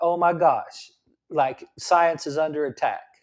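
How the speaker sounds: plain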